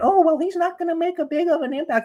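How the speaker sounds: squeaky, very high-pitched, scoffing voice. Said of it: "how high your voice went up in pitch".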